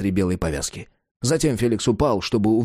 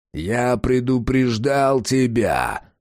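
sharp barked words, тебя drawn out. The wounded vampire faces Felix, who has raised his pistol; barked. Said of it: "рявкнул вампир".

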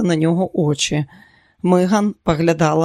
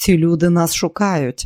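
ordinary delivery, nothing marked

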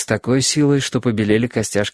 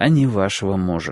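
ordinary delivery

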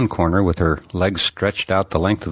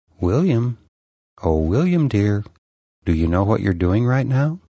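dreamy-sounding voice. A voice in a dream speaks to the narrator again, in a soft voice. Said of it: "the soft dream voice said again".

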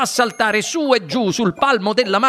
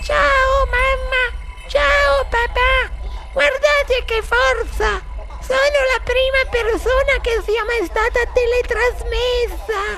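very high, thin, tiny, squeaky mouse voice. Narrator reads the boy calling to his parents from the television, tiny squeaky voice. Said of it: "Una vocina sottilissima, non più forte dello squittio di un topo".

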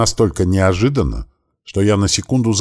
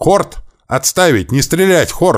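very high, loud shouting; 10 semitones higher than usual. First-person narrator of a novel yells at the soldiers: shouted loudly. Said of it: "громко заорал".

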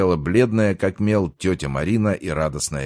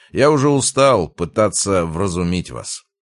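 usual speaking voice

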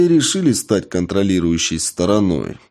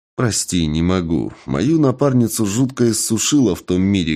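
ordinary delivery

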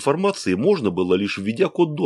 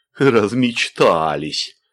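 laughing while speaking; 3 dB louder than usual. Narrator reads a professor answering a young woman, laughing. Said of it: "засмеялся профессор".

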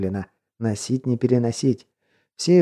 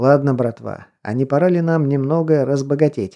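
usual speaking voice

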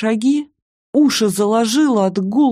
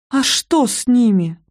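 frightened, scared whisper, slower; 3 semitones higher than usual. Narrator, just helped up by Rogozin, asks him a question: frightened whisper. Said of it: "Испуганно прошептала".

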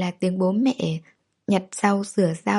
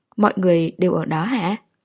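ordinary delivery, nothing marked

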